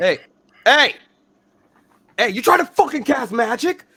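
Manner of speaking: loud, very high, hostile and aggressive. A game master voices a creature turning hostile on the party, aggressive. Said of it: "get a little bit more aggressive".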